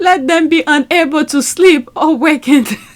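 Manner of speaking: speaking through giggles. Reading a prayer aloud that strikes the speaker as savage, laughing while reading. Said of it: "I'm sorry I'm laughing".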